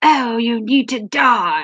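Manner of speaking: put-on intensified, deliberate English accent. Retelling what Verdict said during chess: imitating Verdict's intense English accent. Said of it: "His accent becomes more intense".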